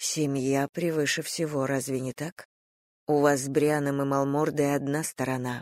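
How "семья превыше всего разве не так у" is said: plain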